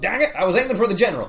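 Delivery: high, loud, fast, botched put-on Irish accent.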